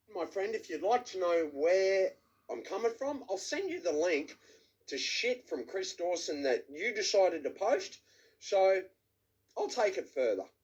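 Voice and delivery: a bit slurred, words running together. A man leaving an erratic voice message: slightly slurred speech. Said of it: "slurring a little bit".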